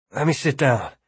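ordinary talk

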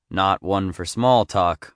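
ordinary delivery

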